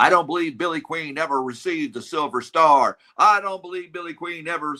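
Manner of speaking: high, repeated screaming. Retelling what a former Marine kept saying: imitating someone screaming. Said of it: "who kept screaming".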